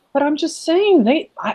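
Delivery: put-on insistent, high-pitched child voice.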